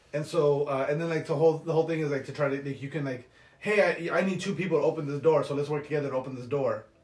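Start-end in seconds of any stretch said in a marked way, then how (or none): none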